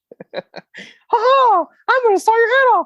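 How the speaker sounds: squeaked out, very high pitch, loud. In a joke bit between friends, the speaker does a Mickey Mouse voice. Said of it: "Mickey Mouse is gonna torture you".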